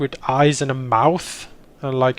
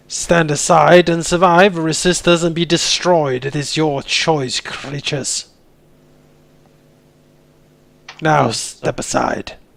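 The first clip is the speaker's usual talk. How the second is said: loud raised voice, louder; 4 dB louder than usual. Voicing a character addressing the creatures: raised voice. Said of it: "raise his voice in Aklo towards the creatures".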